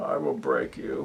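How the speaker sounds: hushed, breathy, whispered masked-villain voice. After telling listeners you hope they enjoyed it, return to your Bane impersonation. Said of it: "little impersonation of Bane".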